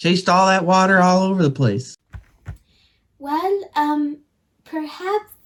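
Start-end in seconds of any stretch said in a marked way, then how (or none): 3.2-5.3 self-doubting, much higher, quieter and slower. After an hour of searching, suggesting the next step, doubting himself. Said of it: "(doubting self)".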